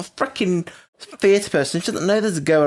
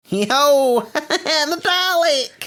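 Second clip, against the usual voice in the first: very high, slow, mock New York accent. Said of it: "now speaks with a New York accent".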